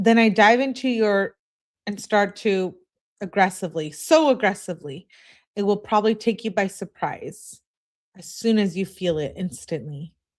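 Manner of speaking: ordinary delivery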